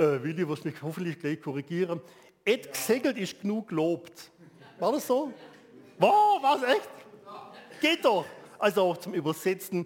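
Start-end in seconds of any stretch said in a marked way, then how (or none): 2.4-4.3 Swabian dialect accent. Translating an English saying into a Swabian expression, in Swabian accent. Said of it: "jetzt versuche ich es mal auf schwäbische taube Ausdrucksweise".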